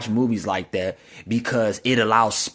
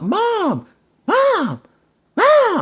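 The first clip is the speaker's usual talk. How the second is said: acted very high, shrill, insistent, swooping child's scream; 6 dB louder than usual. Speaker retelling how the five-year-old screams for Mom: imitating a child screaming. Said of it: "he's screaming at top".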